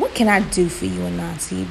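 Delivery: plain reading voice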